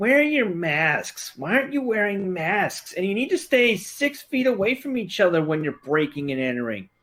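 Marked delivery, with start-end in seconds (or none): 0.0-5.7 extremely exaggerated mocking woman's voice, pitched up.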